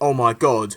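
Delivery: caring, concerned, worried tone. Showing how you would react to the pyro accident: concerned tone of voice. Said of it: "but in a concerned tone of voice".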